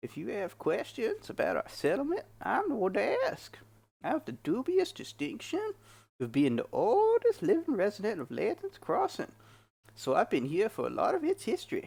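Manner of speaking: put-on high, swooping old prospector voice. Voicing Eldian, the settlement leader, in an old prospector voice. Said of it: "old man, like, panning for gold type voice".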